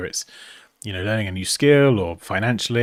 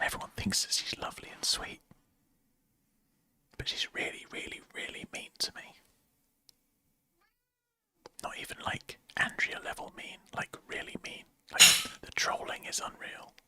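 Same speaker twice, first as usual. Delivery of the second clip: hushed whisper, higher and quieter; 13 dB quieter than usual. Complaining about someone nearby who might overhear, whispering. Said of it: "I'm sorry we have to whisper".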